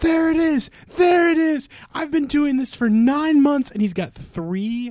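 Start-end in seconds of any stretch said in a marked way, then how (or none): 0.0-3.7 put-on shrill child screaming, very high and very loud. Retelling a video of a kid finding a shiny Ponyta, imitating a screaming kid. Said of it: "he just starts screaming".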